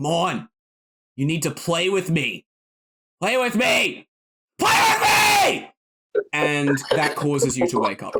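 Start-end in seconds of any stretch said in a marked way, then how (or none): 0.0-5.7 pitched-up swinging, insistent tone. Voicing a scowling figure that yells at a dreamer: Gappa yelling. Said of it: "Gappa is starting to yell at you".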